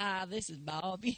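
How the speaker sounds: put-on drawling southern accent. Recalling asking for Cheryl as a teen, the speaker repeats his greeting in a southern drawl. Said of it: "I spoke with a southern drawl".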